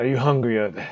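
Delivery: growling, gruff captain-style voice. Running a game, voicing a character who growls at the player, growling. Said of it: "he kind of growls at you".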